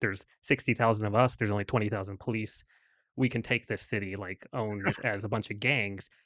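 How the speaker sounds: plain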